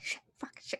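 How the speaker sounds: whispered string of curses under the breath. Voicing a character swearing after a stabbing: swearing under her breath. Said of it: "swearing under her breath".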